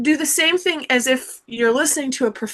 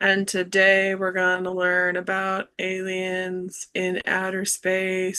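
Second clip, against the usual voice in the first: very low, very slow, bored monotone drone; 7 semitones lower, 6 dB quieter than usual. Imitating a teacher who is not very excited: imitating a flat, unexcited teacher. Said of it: "have you ever had a teacher that kinda talks like that?".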